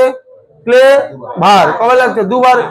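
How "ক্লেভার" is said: "clever" very slow, broken into syllables.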